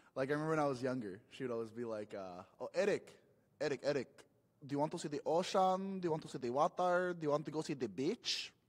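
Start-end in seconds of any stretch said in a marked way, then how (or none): 2.6-8.5 put-on heavy, thick Filipino accent, fond, laid on. Retelling how his mother would ask him as a boy, in a thick Filipino accent. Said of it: "she has a really thick accent".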